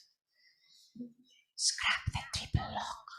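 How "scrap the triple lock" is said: soft, unvoiced whisper. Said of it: "I'm going to whisper this".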